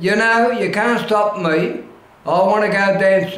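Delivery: ordinary talk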